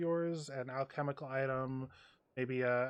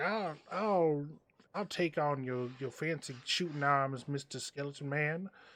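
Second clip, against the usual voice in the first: put-on elderly man voice calling out. In a role-playing game, a player voices an old man from the crowd, old man voice. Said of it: "an old man uh, from the crowd comes out and he's like".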